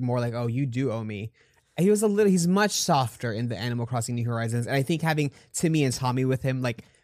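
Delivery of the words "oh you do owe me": put-on smug voice, lower. Describing an older game's Tom Nook with an attitude: smug Tom Nook voice. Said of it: "real smug, had an attitude".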